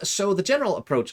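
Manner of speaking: very high put-on gnome voice. A World of Warcraft player talks to viewers about his lore run, gnome voice. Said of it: "I'll stop doing the gnome voice".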